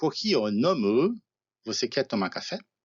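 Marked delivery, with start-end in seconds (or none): 0.0-1.2 slow kohi o nomu, rising at the end. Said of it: "com essa entonação que sobe no fim".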